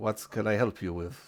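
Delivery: put-on Spanish-sounding accent. Voicing Antonio greeting a player at the gate: Spanishy accent. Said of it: "more Spanishy sort of accent".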